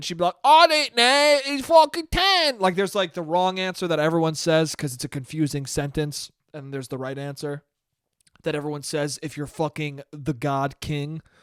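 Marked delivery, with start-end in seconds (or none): 0.4-2.6 very high, slow, drawn-out, bad put-on British accent. Acting out a woman's reply in the story, in a really bad British accent. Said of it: "I'm going to do a really bad one".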